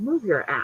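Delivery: grumbled, hushed mutter under the breath. Retelling what a man in a grocery store said: imitating a mutter under the breath. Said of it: "under his breath".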